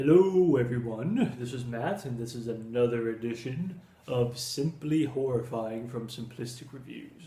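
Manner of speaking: deliberately put-on deep voice. Opening a review with a greeting: put-on deep voice. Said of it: "I'm using my deep voice for this one".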